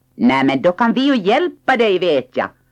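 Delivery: high voice, calling out loudly. Little My calls up to Hemulen, sitting alone on his roof; calling out. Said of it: "ropade Lilla My".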